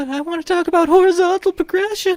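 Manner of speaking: very high, squeaky put-on voice. Speaker recounts forum posters repeating a request for 33 pages: imitating in a high-pitched voice. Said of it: "Sorry, high-pitched voice".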